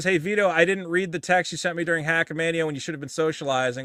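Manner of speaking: normal talking voice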